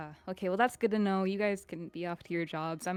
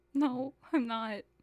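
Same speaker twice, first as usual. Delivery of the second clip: fake weepy, tearful voice, pitched up; 5 semitones higher than usual. A roleplay character denying being jealous, in a fake crying voice. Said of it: "You're crying".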